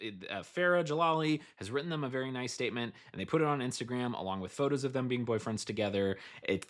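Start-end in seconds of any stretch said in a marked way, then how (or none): none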